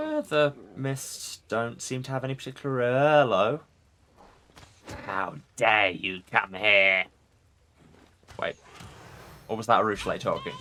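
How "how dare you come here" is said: drawn-out, slow, witchy hag voice. Reading a game line aloud, expecting a hag to speak: hag voice. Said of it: "I was preparing a hag voice".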